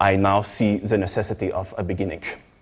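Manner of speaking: put-on thick, heavily laid-on German accent. Quoting a man speaking to the gathered media, in a thick German accent. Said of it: "say in his thick German accent".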